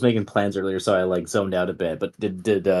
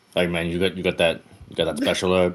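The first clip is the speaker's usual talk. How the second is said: normal talking voice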